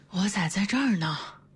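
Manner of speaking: faint, weak, feeble, strengthless voice. A character stirring like a patient waking from a coma, in a weak, feeble voice. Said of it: "有气无力地来了一句".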